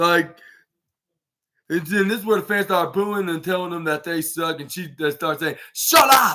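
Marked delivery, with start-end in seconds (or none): 5.7-6.4 put-on European accent, higher and louder. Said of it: "Like if she was, uh, who, I'll say Toni Storm".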